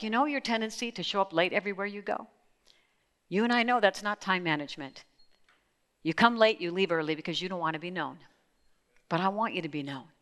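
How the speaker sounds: gentle, caring, calm voice. Retelling what he would say to call you up, quoting him in a gentle voice. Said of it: "He would say something in a gentle voice like".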